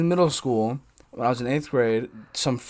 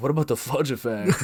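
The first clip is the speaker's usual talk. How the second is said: mock condescending, put-on condescension, quieter; 5 dB quieter than usual. Quoting a man's joking suggestion, said to the speaker, mock-condescending. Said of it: "he said it in like a condescending way".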